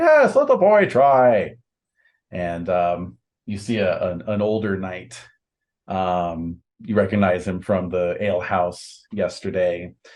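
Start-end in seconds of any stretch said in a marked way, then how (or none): 0.0-1.5 loud, high shout. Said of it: "And another's like".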